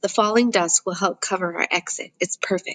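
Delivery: ordinary delivery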